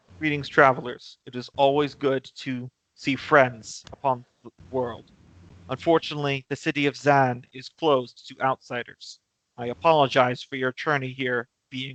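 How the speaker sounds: deep, earthy, calm, even monotone. The speaker voices a character greeting travelers seeking sanctuary, deep calm monotone. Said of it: "very like deep, very earthy, but also very calm and very monotone".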